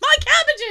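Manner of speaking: sudden, very high, panicked blurted outburst. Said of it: "Look like you're in a panic and suddenly blurt out".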